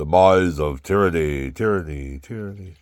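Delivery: grand, grave, booming headline voice, very loud. Reading a newspaper headline aloud to listeners, in a big solemn voice. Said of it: "in a big solemn voice".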